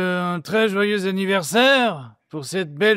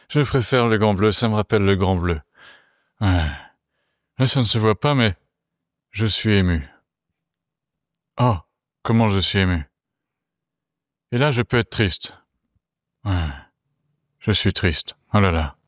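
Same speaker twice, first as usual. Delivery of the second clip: very low, utterly flat deadpan; 12 semitones lower than usual. Asked by a co-host to answer as Jean Reno: Jean Reno impression. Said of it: "Jean Reno, réponds".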